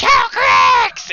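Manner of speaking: shrill, very high, gleeful shriek at full blast. Voicing Meepo as he spots the dragon: excited scream. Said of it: "he's, like, screaming, like, excitedly".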